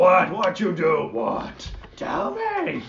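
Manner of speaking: very loud, rowdy, swooping orc voice yelling. Voicing another orc eagerly asking to hear the story: orc voice. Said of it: "And the other orcs".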